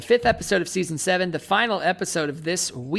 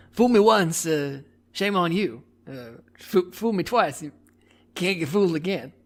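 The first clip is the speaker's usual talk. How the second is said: stumbling, halting delivery with pauses. Doing an impression someone asked for, quoting a saying: George W. Bush impression. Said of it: "give us a little George Dub".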